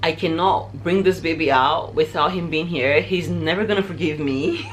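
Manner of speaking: usual speaking voice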